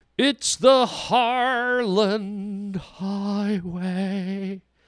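tiny, soft voice, very slow and drawn out. Podcast host opening the show, in a soft little voice. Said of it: "I did that little soft little voice".

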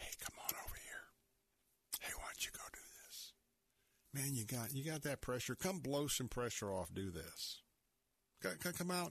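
soft, breathy, coaxing, enticing whisper. Retelling what Satan always whispers to tempt people: Satan's tempting whisper. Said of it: "Satan's always going to whisper".

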